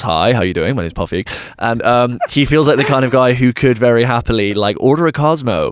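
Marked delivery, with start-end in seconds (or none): 0.0-1.3 confident, self-assured, easy-going tone. Describing how a well-dressed director talks, then imitating him: Paul Feig voice. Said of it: "he speaks a lot like this".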